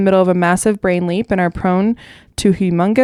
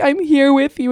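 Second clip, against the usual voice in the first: put-on gentle motherly voice, higher; 7 semitones higher than usual. Imitating a parent in videos mocking gentle parenting: fake mom voice. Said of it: "the fake mom voice".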